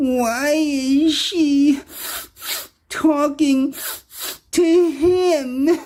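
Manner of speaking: very high, tearful, whiny, halting whimper, voice breaking. Retelling what someone said about your former friend: imitating a very whiny voice. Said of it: "very whiny voice".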